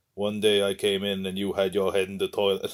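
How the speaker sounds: ordinary talk, nothing marked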